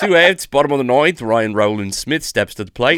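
put-on Australian accent. Asked for their best australian accent, doing a baseball call: australian accent. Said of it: "Do your best Australian accent".

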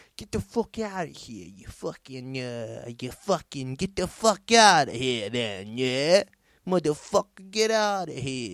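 gross, woefully bad put-on American accent. Telling a story, voicing what someone should have yelled at a man, bad gross put-on american accent. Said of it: "Giving him that old gross fucking accent".

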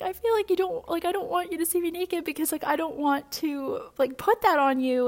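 high-pitched tearful speech, crying throughout. Retelling what she told her boyfriend through tears: retelling own crying speech. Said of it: "I just started to cry".

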